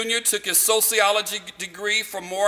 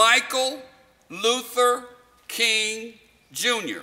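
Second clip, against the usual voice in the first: slow, deliberate, unhurried, each word spaced apart. Lecturing on king's early life, correcting his birth name, said slowly. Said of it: "I say that slowly".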